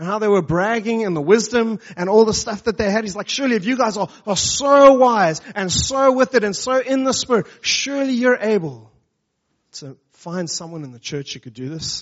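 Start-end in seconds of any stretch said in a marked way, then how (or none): 3.3-12.0 cutting, sneering, deeply biting sarcasm. Retelling what he said to those who bragged of their wisdom, acting out biting sarcasm. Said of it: "he comes with like deeply biting sarcasm".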